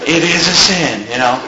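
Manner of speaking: small little voice, pitched low. Retell Joel Osteen's answer that shocked the host, as Joel Osteen in a little voice. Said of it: "in his little queer little voice".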